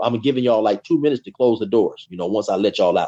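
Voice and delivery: ordinary talk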